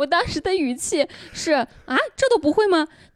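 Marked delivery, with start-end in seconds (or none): 1.5-2.9 mock, slightly impatient, mildly exasperated tone. Retelling own words during a back-scrubbing spat: imitating own slightly impatient tone. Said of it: "我当时确实有一点点不耐烦".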